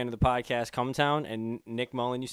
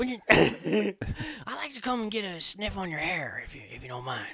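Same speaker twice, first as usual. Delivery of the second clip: put-on elderly politician voice, pitched up and swooping; 7 semitones higher than usual. Speaker giving his best attempt at a Joe Biden impression. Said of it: "my best attempt at a Joe Biden impression".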